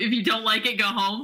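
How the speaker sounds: bratty, snide, snotty tone. Retelling her reply to a complaint shouted through the wall: mock-snotty retort. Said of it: "Just like the snottiest little answer of".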